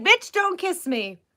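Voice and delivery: fed-up pet voice. Voicing the dog, who doesn't like kisses: voicing the dog refusing kisses, annoyed. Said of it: "He doesn't like kisses at all".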